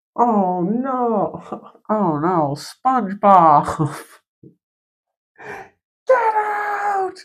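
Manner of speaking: very slow, high, swooping, stretched-out cartoon voice. Quoting a cartoon character after mentioning getting ink: Squidward voice. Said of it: "Quote, Squidward tentacles from SpongeBob".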